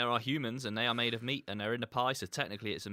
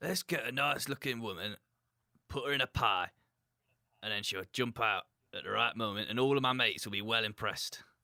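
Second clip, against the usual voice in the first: broad-sounding, put-on Yorkshire accent. Voicing the bloke who came up with the pie idea, in a Yorkshire accent. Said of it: "I don't know why they had a Yorkshire accent there".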